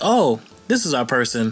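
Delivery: ordinary delivery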